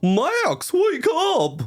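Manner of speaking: very high, squeaky cartoon voice swooping up and down. Retelling doing a voice that upset her, calling Max to wake up; Goofy impression. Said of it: "I did an impression of Goofy".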